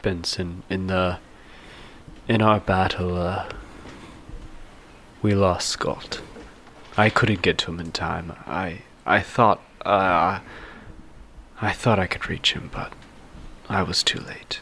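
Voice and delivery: quiet, hushed, confiding whisper. Voicing a character consoling another after a lost battle: whispering quietly. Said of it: "he kinda whispers quietly".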